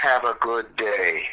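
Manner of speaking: put-on whisper. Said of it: "and he said in a whisper".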